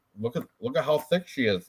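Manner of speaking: plain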